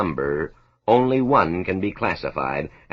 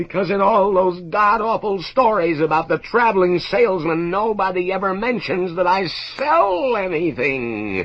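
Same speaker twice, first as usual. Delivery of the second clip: very high, shrill screaming outburst; 12 semitones higher than usual. A traveling salesman complains about his trade: screaming. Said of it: "and then he begins to scream".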